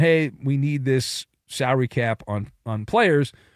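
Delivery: plain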